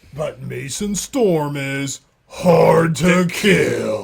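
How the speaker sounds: loud, dramatic movie trailer narrator voice. Chatting about a favorite movie, quoting its line in a movie trailer voice. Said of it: "That's exactly how it sounded".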